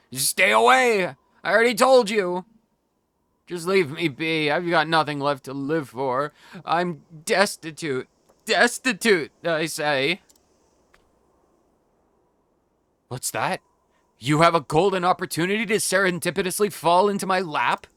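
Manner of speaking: put-on drunk, tipsy voice. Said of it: "I'm a bit drunk".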